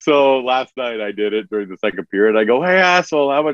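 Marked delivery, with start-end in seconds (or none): 2.6-3.5 mock rowdy yell, high and loud. Retelling how he shouted to everyone in his section during a period, retelling a loud yell. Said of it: "you're yelling it as loud as you can".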